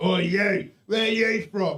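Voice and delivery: put-on drunk man voice. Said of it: "He's drunk out of his face".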